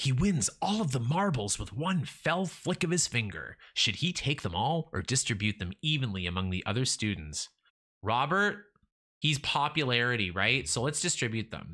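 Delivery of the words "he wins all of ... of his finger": grand, dramatic storybook-style reading with flair. Reading a story about a boy at recess aloud, more dramatically. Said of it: "I'm gonna read it more dramatically".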